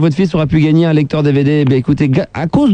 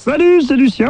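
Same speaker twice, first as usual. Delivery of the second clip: high, silly little put-on voice. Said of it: "Je fais une petite voix, je fais n'importe quoi".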